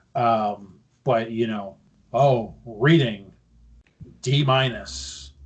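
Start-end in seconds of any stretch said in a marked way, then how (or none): 2.1-5.2 put-on monotone reading voice. Retelling a report card being read out: monotone Shane McMahon impression. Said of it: "very monotone".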